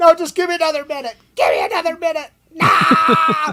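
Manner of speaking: put-on very high, very loud, shrill, ear-splitting child scream. Retelling a kid at a shot station, imitating a screaming kid. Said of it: "at the top of his lungs".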